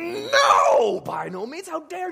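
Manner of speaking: very high, swooping, exasperated, spat through gritted teeth. Speaker explaining a greek phrase acts out the reply: exasperated, spitting through teeth. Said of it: "exasperated, spitting through his teeth".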